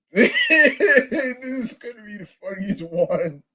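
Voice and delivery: high, laughing, giggling delivery.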